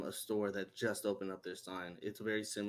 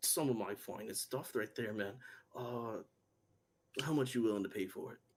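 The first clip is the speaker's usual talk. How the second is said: grumpy, disgruntled dwarf character voice. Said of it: "a very disgruntled, uh, or, uh, dwarf".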